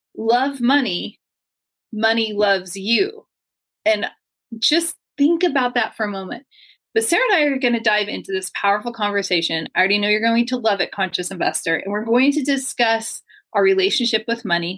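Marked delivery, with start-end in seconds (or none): 0.2-3.3 very slow, deliberate, word-by-word reading. Speaker rereads a title phrase for listeners, reading it slowly. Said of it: "I'm going to read it again slowly".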